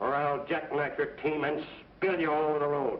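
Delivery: plain reading voice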